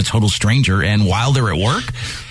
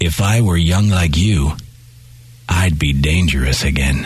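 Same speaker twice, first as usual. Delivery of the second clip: quiet, hushed, much lower pitch; 6 semitones lower than usual. Leaning in close, he speaks so only the narrator can hear, in a quiet voice. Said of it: "said in a quiet voice, low enough for only the two of us to hear".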